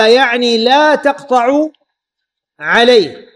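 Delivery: ordinary talk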